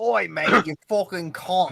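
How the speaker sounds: mock, put-on Australian accent. After someone says it's hard to do drunk, trying an Australian accent. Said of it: "hard to do an Australian accent".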